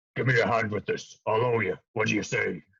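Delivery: gruff, rough-edged creature voice. Poking his head out, the character turns to the listener, in a gruff voice. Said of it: "in a gruff voice again looks at you".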